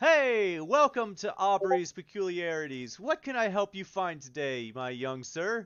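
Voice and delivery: loud, beaming, cheerful voice. Narrator voicing a shop owner greeting someone who just entered, beaming, smiling voice. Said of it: "a brimming smile off of him".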